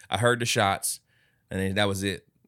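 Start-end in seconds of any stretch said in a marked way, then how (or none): none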